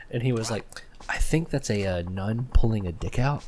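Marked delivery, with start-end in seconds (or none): 1.1-3.4 slow, hushed stage whisper, half-whispered. Retelling how a friend half-whispered the on-screen action to Rebecca: imitating Andy half-whispering. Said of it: "whispering to her everything that was happening on screen".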